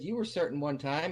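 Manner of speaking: ordinary delivery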